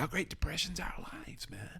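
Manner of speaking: breathy, half-whispered delivery. Quoting a favorite movie line: Brad Pitt impression. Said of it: "I love the way he says".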